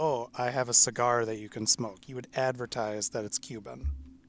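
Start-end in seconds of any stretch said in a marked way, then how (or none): none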